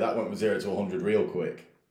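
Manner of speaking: normal talking voice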